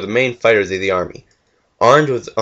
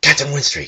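sharply breathed out, higher pitch; 5 semitones higher than usual. Bergeron looks south and calls out to captain winstreak, breathed sharply. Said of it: "breathed sharply".

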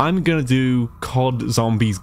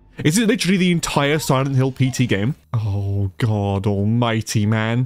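ordinary talk

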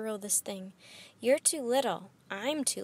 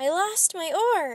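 very slow, stretched-out, loud and high yell; 6 semitones higher, 6 dB louder than usual. On a ship as rain starts, a character whose oar was ripped away is yelling. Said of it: "Annie yelled".

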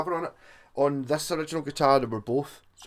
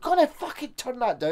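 very high, loud shout, acted out; 10 semitones higher than usual. Retelling how the drummer reacted to a loud amp: imitating a shouting drummer. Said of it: "the drummer's just shouting at you".

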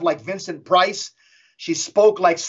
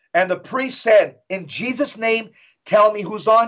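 ordinary talk

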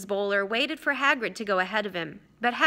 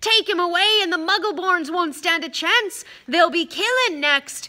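loud, high yelled outburst; 8 semitones higher, 6 dB louder than usual. Hagrid yells, making Fang the boarhound cower in his basket. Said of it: "yelled Hagrid".

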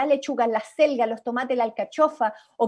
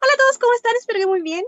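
very high, quick, tiny birdlike chattering voice; 11 semitones higher, 5 dB louder than usual. In a character exercise, greeting everyone as a little bird: fast little bird voice. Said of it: "cómo saludaría este pajarito".

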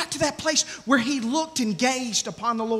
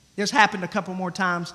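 usual speaking voice

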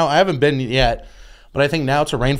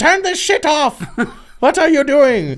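put-on very high-pitched voice, thick German accent; 12 semitones higher than usual. Retelling the speaker's mom reacting to the bad words in the music, in a thick German accent. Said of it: "with her thick German accent go".

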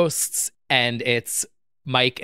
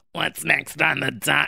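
put-on monster voice, higher pitch; 3 semitones higher than usual. Asked to talk with a voice, doing a Roz impression. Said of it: "That's a really good Roz impression".

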